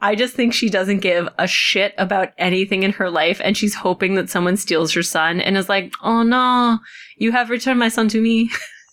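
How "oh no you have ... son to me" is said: put-on French accent on every word. Acting out a mother's reaction to her son being returned, in a french accent. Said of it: "That's my French accent".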